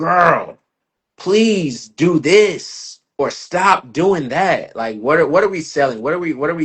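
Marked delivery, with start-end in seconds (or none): 0.0-4.7 very slow, loud, raised, drawn-out yell. Acting out viewers yelling at the screen: imitating someone yelling. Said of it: "yelling at the screen".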